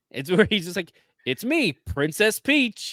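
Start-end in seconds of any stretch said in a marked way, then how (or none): 1.2-2.9 very slow, high, drawn-out put-on feminine voice. Joking about a Chris Pratt female voice: Chris Pratt female voice. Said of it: "what if it's a Chris Pratt female voice?".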